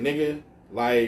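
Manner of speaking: plain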